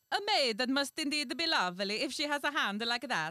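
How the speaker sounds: loud, high, bad mock Italian accent. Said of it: "a bad Italian accent".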